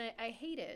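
usual speaking voice

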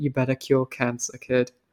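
private, low, quiet murmur. Recapping a film, the speaker quotes Childman speaking into the kid's ear: Childman speaking quietly. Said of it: "like quietly".

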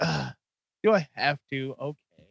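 barely audible, grudging, reluctant, acted manner. Retelling how the last impression sounded: imitating a grudging reluctant reply. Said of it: "It was like".

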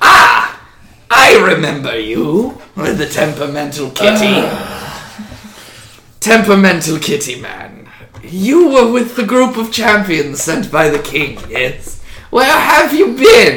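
high, loud, swooping put-on reptilian creature voice. A lizardfolk from behind the throne addresses a champion sent by the king; lizardfolk character voice. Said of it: "a lizard folk walks from almost out of nowhere behind the throne and kind of walks alongside and looks directly at Squall. / He is the leader of Rose Hall and one of my trusted and most closest friend".

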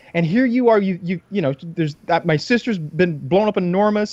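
exasperated high-pitched ranting.

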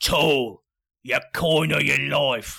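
booming, very loud, snarling, growling voice. Narrator voices the largest of five figures waving a knife, growling.

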